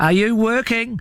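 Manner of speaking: very high shout called out to carry far. He shouts down to the marching ants, shouted. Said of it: "He shouted".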